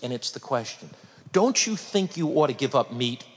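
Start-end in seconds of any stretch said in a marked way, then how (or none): 1.3-3.2 threatening, intimidating, menacing delivery. Speaker demonstrating a threatening question to an audience, in a threatening tone. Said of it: "It's in the tone of my voice".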